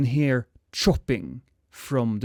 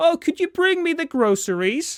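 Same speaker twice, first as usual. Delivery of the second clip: very high, loud shouted yell. Voicing a woman character in a played scene, character yelling. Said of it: "she's yelling".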